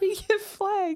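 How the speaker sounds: high, slow laughing yell.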